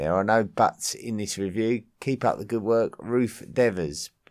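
normal talking voice

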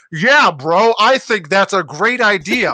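stilted, high, loud, slow dubbed-sounding line reading.

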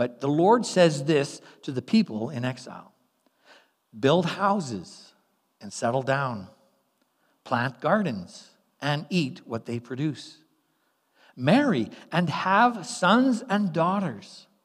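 unhurried, slow, measured, deliberate reading voice. Reading an important scripture paragraph aloud so it sinks in: reading slowly. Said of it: "I'm going to read it slow".

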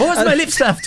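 put-on raging girl voice. Retelling a favorite line from a show: imitating a girl in a rage. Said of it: "walks through the house in such a rage".

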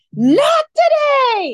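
piercing, high, shrill, loud, full-throated scream. Retelling yelling at a driver from the car window, reenacting a scream. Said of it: "and I'm screaming".

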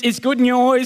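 slight Geordie accent. Mid-talk, slipping briefly into a bit of a Geordie accent. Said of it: "Stepping in a bit of Geordie's accent there".

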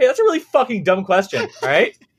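mock defensive outburst. Acting out an answer to a listener-count question: mock upset defensive reply. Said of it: "get really upset, defensive".

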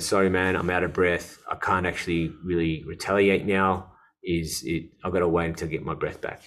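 plain

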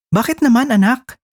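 startled, caught off guard, high surprised tone. A mother responds to her child's words, a surprised question. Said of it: "Gulat na tanong ni [name]".

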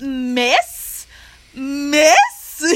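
cracking teacher's-pet voice. Describing a guy who imitates teacher's pets, doing Snarky Marky's voice cracks. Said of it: "He does, like, these voice cracks".

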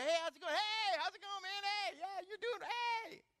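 very high, loud, casual, breezy delivery. Acting out coworkers walking in: imitating coworkers' casual greetings. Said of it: "People you go to work with, they walk in, they go".

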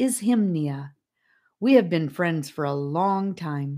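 ordinary delivery

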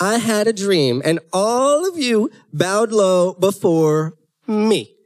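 very slow, deliberate, drawn-out inflection. Acting out how a younger brother tells his dream: imitating a younger brother. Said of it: "that's how they'd say it".

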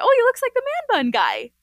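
mock loud, very high, swooping exclamation. Retelling a remark about a man coming out: imitating a loud remark. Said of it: "I loudly said".

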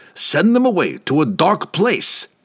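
high, snarling voice. Reading a story, the guildmaster snarls an order at the wizard Laval: snarling. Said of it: "[name] sat back in his great chair, watching the destruction through an image in the Taros hoop. It did not pain the guildmaster to see the were-rats dying".

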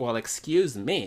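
ordinary talk

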